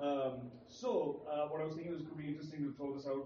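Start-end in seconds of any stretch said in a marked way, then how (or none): 1.3-3.2 rapid, rushed delivery. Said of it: "இவ்வளவு வேகமா பேச".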